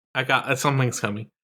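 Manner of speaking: ordinary talk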